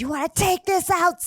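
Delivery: mock hostile scream, fast, shrill, aggressive. Retelling how a woman came up from behind at a game, retelling a woman screaming. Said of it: "starts screaming at me, said".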